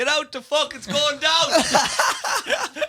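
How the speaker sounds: put-on drunken roar, very high, slow and laughing.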